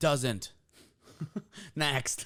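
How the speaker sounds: blunt, aggressive, loud, high, curt delivery. Answering whether fasted cardio helps fat loss: aggressive, curt dismissal. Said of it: "don't be so aggressive".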